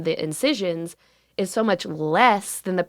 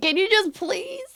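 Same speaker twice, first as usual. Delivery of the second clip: very high, near-tears, tearful pleading voice; 12 semitones higher than usual. Retelling stressful calls to insurance while in pain, imitating own crying phone voice. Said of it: "That's a good phone voice. a little southern crier".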